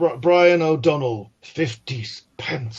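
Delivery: acted-out contemptuous, angry, shaming, humiliating tone. Recalling how the priest read out donations, imitating an angry, humiliating priest. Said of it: "in a sort of very angry, uh, humiliating voice".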